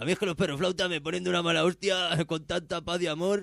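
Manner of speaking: high, dopey, dumb-sounding idiot voice. Speaker reads a line aloud to the other speaker in a dumb idiot voice. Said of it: "Lo voy a leer con una voz así como de imbécil".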